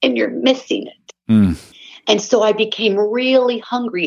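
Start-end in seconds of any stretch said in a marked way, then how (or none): 0.0-1.3 unforced, understated, low-key delivery. Retelling being told something in a quiet voice: retelling a quiet voice. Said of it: "And in this quiet voice".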